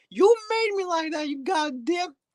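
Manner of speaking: squeaky, high-pitched little voice. Voicing a Givenchy mini bottle that just won: high-pitched Givenchy bottle voice. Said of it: "Why do you sound so high-pitched".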